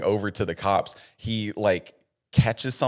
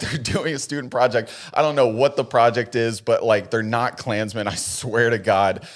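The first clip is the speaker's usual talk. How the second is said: ordinary talk, nothing marked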